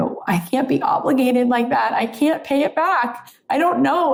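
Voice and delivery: play-acted high voice, speaking through tears. Retelling own words to a partner who paid for a car: retelling own crying. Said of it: "I was crying".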